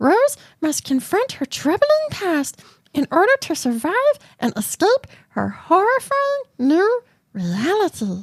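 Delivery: deliberately weird put-on voice. Reading a film summary aloud, in the most odd voice possible. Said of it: "In the most odd voice possible".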